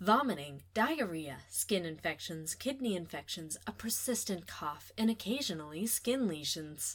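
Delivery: TV commercial voiceover delivery. A speaker switches voices mid-explanation, commercial voice. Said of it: "now I'm going to use my commercial voice".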